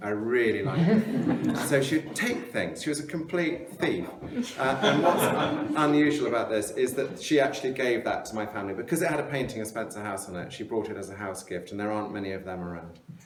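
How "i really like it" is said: slow, louder, insistent, pointed, queenly voice. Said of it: "And she'd go".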